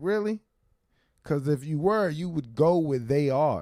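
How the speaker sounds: sharp, piercing brush-off. Retelling what a teacher said on hearing about stand-up: imitating a cutting, dismissive remark. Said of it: "She said it in, like, that way".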